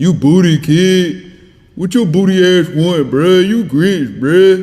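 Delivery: loud, high, drawn-out, unserious teasing tone. Retelling how Miami the Kid trolls all day: imitating Miami the Kid trolling. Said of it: "he just troll all day".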